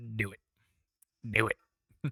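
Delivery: very slow, drawn-out, every word dragged out. Urging a viewer to get a takeaway: Palpatine impression. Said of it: "That's my best Palpatine impersonation".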